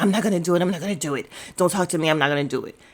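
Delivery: touchy, aggressive, flat, stubborn, temperamental tone. Retelling how someone refused to watch a show: imitating Ice being temperamental. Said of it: "Ice is just so temperamental".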